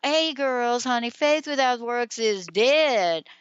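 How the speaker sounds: very slow, dead stretched southern drawl. Quoting how she used to say a phrase, in a slow Southern drawl. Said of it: "she would say it like uh, E J with this southern drawl".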